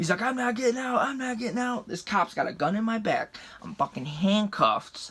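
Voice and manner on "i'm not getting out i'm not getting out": yelling in a high voice. Retelling a police stop, imitating a friend refusing to leave the truck: imitating a friend yelling. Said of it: "My buddy is yelling at me".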